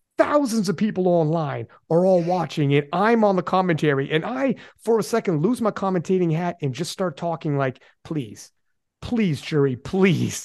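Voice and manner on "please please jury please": acted-out mock begging, slower. On commentary, he recounts dropping his role to plead with the jury, retelling his begging. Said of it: "I'm literally begging".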